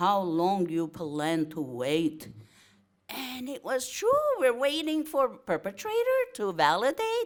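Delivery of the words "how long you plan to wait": put-on Viennese accent. Retelling the question a man asked you, in his heavy Viennese accent. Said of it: "with his heavy Viennese accent".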